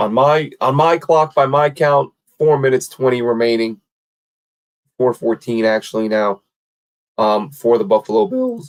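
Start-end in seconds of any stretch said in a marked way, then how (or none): 7.5-8.7 voice cracking and breaking mid-phrase. Counting down the clock and announcing the pick, voice cracking. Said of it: "Voice crack".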